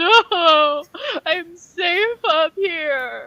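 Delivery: loud sobbing, very slow and drawn out. Voicing Kisses, just pulled from his branch and refusing to come down: crying. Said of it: "and he is crying".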